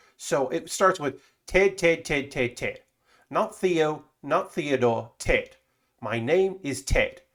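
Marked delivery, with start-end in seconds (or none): 1.5-7.1 hoity-toity put-on posh British accent. The speaker demonstrates the accent learned for a monologue: hoity-toity accent. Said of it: "and that is the accent".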